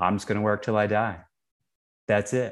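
plain

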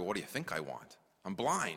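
mildly sarcastic, swooping pitch. Imagining a blind man's reply to Jesus's question: imitating a sarcastic reply. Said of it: "we would maybe a little bit be sarcastic".

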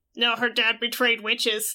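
put-on demonic voice. Recapping a scene where a girl answers a stranger, demon voice. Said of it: "she does demon voice".

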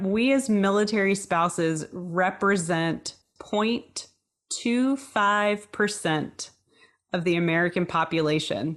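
slow, measured, deliberate, pointed emphasis. A military spouse making a point about fellow spouses, said slowly and loudly. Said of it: "I say that slowly and loudly".

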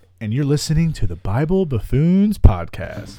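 loud radio-announcer delivery. Opening the podcast episode: radio announcer vibe. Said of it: "That had a real radio vibe".

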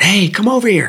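very high, screaming call. Speaker retells a driver calling to him across a highway: retelling a scream. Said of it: "he's screaming across the road".

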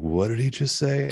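mock drunk or stoned voice. Picturing a really drunk or stoned guy in the crowd: imitating a drunk or stoned guy. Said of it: "really drunk or stoned dude in the crowd".

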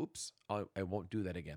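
low, soft, sheepish little voice.

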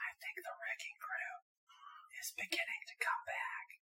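very quiet, hushed whisper, barely audible. Sharing a prediction quietly so as not to jinx it: whispering. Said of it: "I will whisper it".

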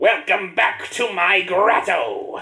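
loud, high, belted cartoon villain voice. Narrating a game scene, the speaker plays the villain in an anime Robotnik villain voice. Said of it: "I'm gonna do the Robotnik from the anime".

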